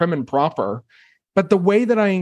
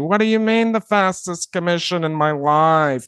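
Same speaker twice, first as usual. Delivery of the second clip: put-on New Jersey accent. Retelling a phone call with Larry, the one who stayed on, imitating Larry's New Jersey accent. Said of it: "he kind of talked like, it's from New Jersey".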